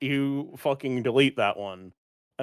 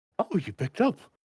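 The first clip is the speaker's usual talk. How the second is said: put-on happy voice, much higher, faster; 8 semitones higher than usual. Retelling the grandsire picking up her call, imitating his happy voice. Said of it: "You can almost hear the happiness in his voice".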